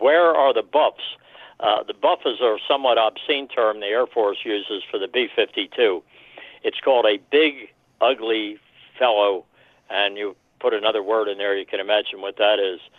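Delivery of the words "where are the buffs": acted-out, all-out screaming, high. Retelling how an Air Force pilot friend reacted to the map: imitating a friend screaming. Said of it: "he's just screaming".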